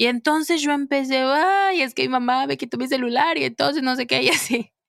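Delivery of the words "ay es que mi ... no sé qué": mock tearful complaining tone, pitched higher. Retelling complaining to the doctor about a phone, imitating own past crying. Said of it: "yo iba hecha un mar de lágrimas".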